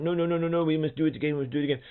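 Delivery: very high, rushed, insistent, repeating put-on Welsh accent. Retelling a man insisting they do it again after it went wrong, imitating a Welsh accent. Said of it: "that was my Welsh accent".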